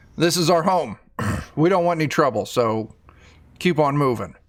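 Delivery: ordinary talk, nothing marked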